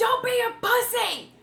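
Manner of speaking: shrill, full-throated, very high, loud, drawn-out scream. Retelling what was screamed during the delivery: imitating own scream. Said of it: "scream it".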